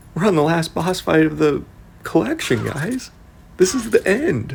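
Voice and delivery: touched, slightly moved, a little emotional. Speaking to viewers before the collection's final boss fight, a little emotional. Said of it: "I'm getting a little emotional here".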